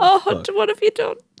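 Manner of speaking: mock-dramatic, high, theatrical wailing lament.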